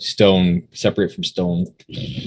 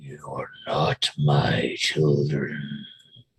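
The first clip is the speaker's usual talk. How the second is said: much lower-pitched and quieter voice; 4 semitones lower, 6 dB quieter than usual. A voice heard in the cavern speaks to the listeners, in a low voice. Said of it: "You hear a low voice".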